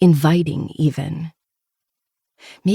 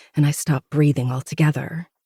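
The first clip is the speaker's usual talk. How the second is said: ordinary delivery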